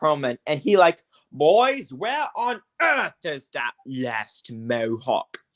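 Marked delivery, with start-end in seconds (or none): 1.3-5.4 animated, swooping put-on British accent. Retelling how a podcast voiced Alfred E. Perlman, Alfred E. Perlman in British accent. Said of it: "He does a British accent".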